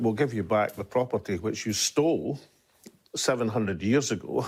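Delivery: normal talking voice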